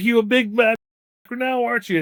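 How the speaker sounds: shrill, very high, loud all-out screaming, acted. Retelling how the drill sergeant screamed at a crying private: imitating someone screaming. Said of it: "He's just screaming at him".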